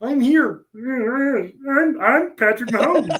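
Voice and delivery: very high, froggy puppet voice, "I'm" stretched. Show friends how the Kansas City quarterback talks: Patrick Mahomes sounding like Kermit. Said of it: "he kind of sounds like Kermit the Frog".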